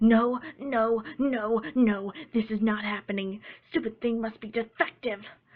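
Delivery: tomboyish defiance, loud, brash, grunted through clenched teeth. Reading a pony story aloud, the pegasus after stomping a test to pieces: Rainbow Dash, defiant through clenched teeth. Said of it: "paced the rainbow mare. / As far as Dash was concerned, this was just one more step to becoming a Wonderbolt, and she was going to win. / paced the rainbow mare. / Dash spoke confidently to herself".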